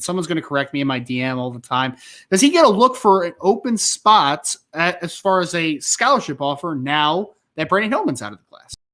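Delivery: ordinary delivery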